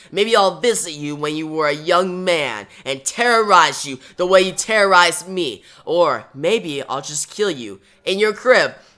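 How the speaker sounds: plain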